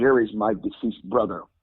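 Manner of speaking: ordinary talk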